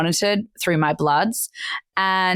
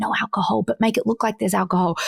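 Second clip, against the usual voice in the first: put-on whisper; 3 semitones higher than usual. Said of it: "keep whispering to the bartender".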